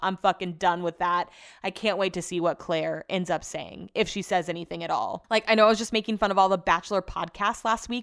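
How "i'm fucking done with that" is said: ordinary talk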